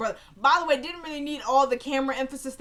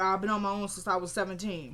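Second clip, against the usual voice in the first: ordinary talk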